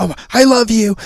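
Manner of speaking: put-on shrill, very high, full-lunged scream. Retelling a cartoon scene, imitating Red screaming at the top of her lungs. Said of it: "screaming at the top of her lungs".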